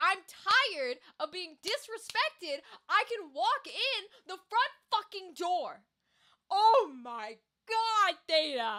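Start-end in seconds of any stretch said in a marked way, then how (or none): 0.0-5.8 huge, fed-up, angry ranting outburst. Retelling a quiet character's sudden outburst in a scene: imitating Wikander's angry rant. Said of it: "his huge fucking rant where he's like".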